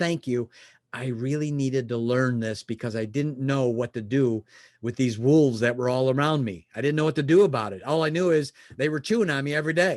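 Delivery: ordinary delivery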